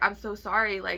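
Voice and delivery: ordinary talk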